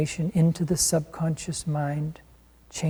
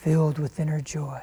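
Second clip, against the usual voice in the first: soft, quiet whisper. Repeating an affirmation after the guide, now in a soft whisper. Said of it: "Now more softly in a whisper".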